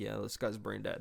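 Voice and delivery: mock muttering. Imagining a remark that someone says under his breath: imitating someone muttering under his breath. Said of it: "saying under his breath".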